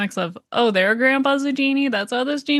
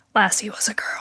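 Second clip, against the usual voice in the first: put-on quiet whisper; 2 semitones lower, 3 dB quieter than usual. Retelling what someone watching beside them said: imitating Jill's quiet whisper. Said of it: "just quietly whispered".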